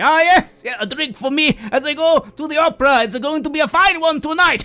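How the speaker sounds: very high, loud, hearty, laughing, boisterous voice. Voicing a bearded gentleman ordering a drink from the barkeep: loud, laughing bearded gentleman. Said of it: "they say to the barkeep near you quite loudly".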